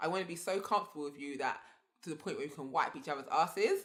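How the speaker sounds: usual speaking voice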